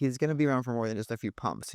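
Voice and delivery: ordinary talk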